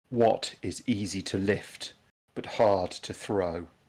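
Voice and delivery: slow, hushed, drawn-out whisper. Voicing a statue asking the players a riddle: in a whisper. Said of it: "in a whisper".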